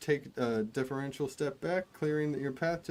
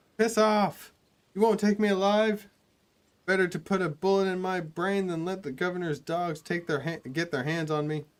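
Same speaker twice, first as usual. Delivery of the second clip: put-on high shout in a boyish voice; 4 semitones higher, 6 dB louder than usual. Describing a locked door, voice someone shouting from behind it in a high boyish voice. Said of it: "a high boyish voice shouts out".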